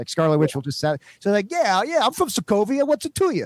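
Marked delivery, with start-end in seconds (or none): 1.2-3.5 put-on Brooklyn accent, pitched very high. Joking that the character's accent keeps fading away: Scarlet Witch with Brooklyn accent. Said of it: "she will literally just be like from like Brooklyn".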